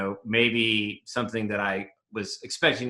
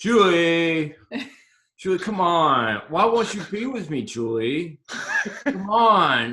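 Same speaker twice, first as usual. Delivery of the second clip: tongue-tied, struggling for words, high and raised; 8 semitones higher, 6 dB louder than usual. Asked to do the Saracen impression, speaker addresses Julie in a Saracen impression. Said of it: "Do your Saracen impression".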